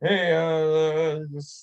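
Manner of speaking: uneasy, thrown-off, weirded-out stammer with a drawn-out uh. Retelling how a new guest answered a handshake: imitating a weirded-out guy. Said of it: "completely weirded out".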